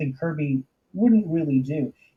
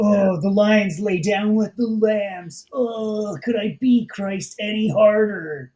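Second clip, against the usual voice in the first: put-on moping sad voice, higher pitch; 4 semitones higher than usual. Acting out a sad, moping Silver Surfer from the comic page: mock moping Silver Surfer voice. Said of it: "he's moping".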